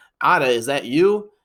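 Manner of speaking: plain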